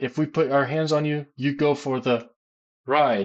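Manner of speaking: ordinary talk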